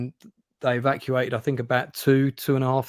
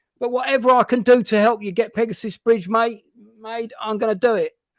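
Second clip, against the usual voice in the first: put-on positive can-do voice, higher and louder; 9 semitones higher, 5 dB louder than usual. Retelling what Alan Tompkins said at their first meeting: impression of Alan Tompkins. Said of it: "a pretty good impression of Alan Tompkins".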